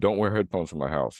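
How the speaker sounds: normal talking voice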